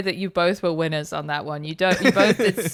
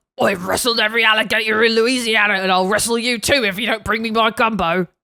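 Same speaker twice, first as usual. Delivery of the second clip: put-on, laid-on blokey voice; 3 semitones higher, 3 dB louder than usual. Speaker delivers a line after offering to do it in bloke mode. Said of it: "Shall I do it in bloke mode?".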